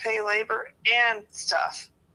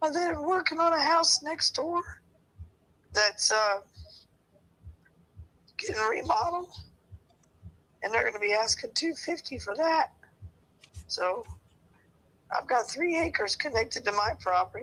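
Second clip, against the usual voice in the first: strained, struggling, messed-up-sounding voice; 3 semitones higher than usual. Explaining a property price to another speaker, messed-up struggling voice. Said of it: "my voice is just messed up".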